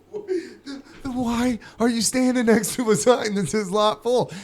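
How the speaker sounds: exasperated, incredulous tone. Retelling arguing with a parking attendant about the sign: retelling a frustrated question. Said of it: "I'm, like, frustrated".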